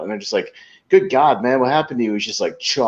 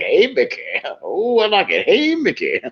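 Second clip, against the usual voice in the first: put-on slow, swooping, very drawn-out leering old-man voice; 8 semitones higher than usual. Retelling a comedy sketch about a horny old man: imitating a horny old man. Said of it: "being like a horny old man".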